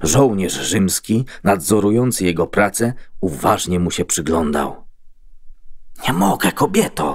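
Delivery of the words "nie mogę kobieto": quiet whisper, much higher. Watched by a Roman soldier, a man answers a pleading woman: quiet whisper. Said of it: "wyszeptał cicho".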